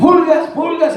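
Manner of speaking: very high, loud shouting.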